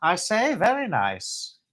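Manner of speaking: fake, put-on British accent, sing-song. Admiring a little cup and saucer together, answering in a mock British accent. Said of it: "I'm never mocking the British. I love the British accent".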